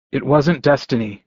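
ordinary delivery, nothing marked

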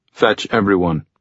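ordinary delivery

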